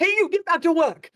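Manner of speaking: shrill, very high, loud yell.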